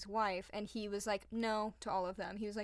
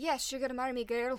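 bad put-on Irish accent sounding Scottish, higher, louder; 3 semitones higher, 4 dB louder than usual. Retelling a legend, speaker voices the father's reply to his daughter: bad irish accent. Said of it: "Just pretend like that was an Irish accent".

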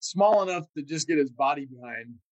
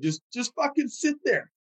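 laughing through the words, pitched up; 9 semitones higher than usual. Retelling what everyone on the radio said to a man under fire, retelling laughing radio talk. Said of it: "everyone would be on the radio laughing".

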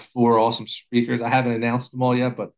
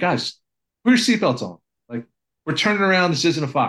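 put-on yell, called out loudly; 5 semitones higher than usual. Retelling yelling back at the guys on a run: imitating own yell. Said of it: "So I just yelled back".

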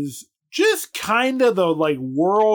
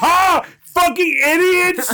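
put-on mocking jeer, higher and louder; 11 semitones higher, 4 dB louder than usual. Acting out taunting the tiny borrowers over fake fruit: acting out laughing at them. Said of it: "Just laughing at them".

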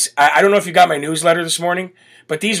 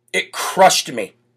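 ordinary delivery

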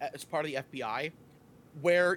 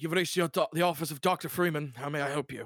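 put-on English accent. Doing the office phone greeting you get after a couple rings, trying an english accent. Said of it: "I'm going to try my English accent again".

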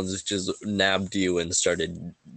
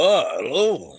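large dwarvish man's voice, loud and high; 7 semitones higher, 6 dB louder than usual. Voicing a large dwarvish man greeting a dancer: large dwarvish man voice. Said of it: "a large dwarvish man goes".

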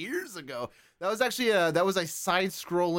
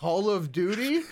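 rising, questioning tune lifting on "Duty"; 3 semitones higher than usual. Teasing another player about an answer, imitating saying it like a question. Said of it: "I like how you said it like a question".

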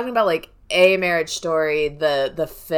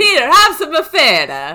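high, loud put-on Italian accent. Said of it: "it's Italian accent".

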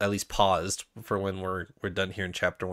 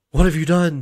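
put-on very loud, high, thrilled outburst; 8 semitones higher, 12 dB louder than usual. Acting out a book character's line in a second chapter: imitating an excited question. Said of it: "it's more of an excited".

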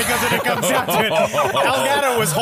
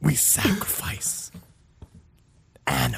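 scary, menacing cult-leader voice; 8 semitones lower, 8 dB quieter than usual. Repeating the line of Constanzo once more: scary Constanzo voice. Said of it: "Scary as shit".

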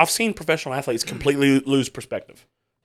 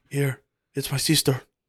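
put-on Mexican accent; 3 dB quieter than usual. Retelling a story, quoting someone handing over the phone, in a Mexican accent. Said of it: "I just did a Mexican accent".

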